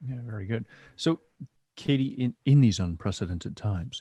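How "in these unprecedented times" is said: solemn, grave delivery in a low, dropped voice. Speaking to Katie about current times, lowered voice. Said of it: "how you lower your voice when you talk about these".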